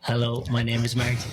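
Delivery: speaking with a natural Irish accent. Podcast guest, asked by the host to say hello into the mic: Irish accent. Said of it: "so everybody can hear your beautiful accent".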